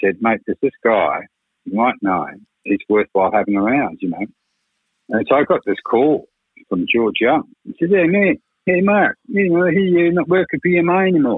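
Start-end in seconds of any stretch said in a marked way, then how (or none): 7.9-11.4 clumsy put-on Scottish accent, pitched very high. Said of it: "I'm doing a bad Scottish accent".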